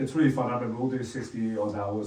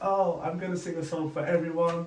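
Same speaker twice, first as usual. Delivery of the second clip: put-on play-acted, high, drunk-sounding girl voice; 7 semitones higher than usual. Telling a story about a drunk girl in the crowd, imitating a drunk girl. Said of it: "she's really drunk".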